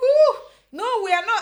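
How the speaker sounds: play-acted very high, shrill, loud, furious outburst. Retelling how the other speaker protested being called late: imitating an angry protest. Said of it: "that's the point where I became mad".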